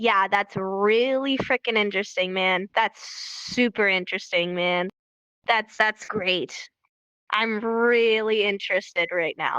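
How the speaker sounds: very sarcastic, fake interest, mock enthusiasm. Showing how someone reacts to a person who won't stop talking: very sarcastic. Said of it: "it's a very sarcastic way".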